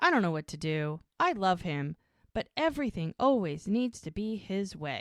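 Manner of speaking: plain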